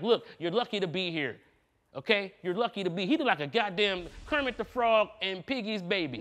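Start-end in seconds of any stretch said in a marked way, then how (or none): 0.0-3.0 acted-out patronizing, talking-down, lecturing tone. Imagining what was said in a sit-down meeting: imitating a condescending tone. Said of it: "very condescending and very like".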